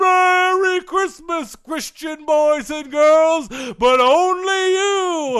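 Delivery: high, beaming festive voice. Podcast host plays Santa Claus for listeners, in a Santa Claus voice. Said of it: "we're going to have Santa Claus give you".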